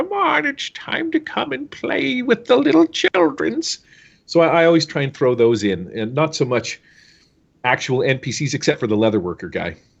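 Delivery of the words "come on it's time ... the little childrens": put-on very high, creaky old granny voice. Describing the voices they like to throw in, old granny voice. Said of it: "I like the old grannies".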